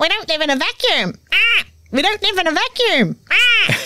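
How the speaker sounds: very high, squawky, bird-like repeating parrot voice. Speaking to the other host about their little inner voice: voice like a parrot on repeat. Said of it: "your little voice that sounded like a parrot on repeat".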